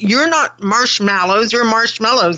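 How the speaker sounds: ordinary talk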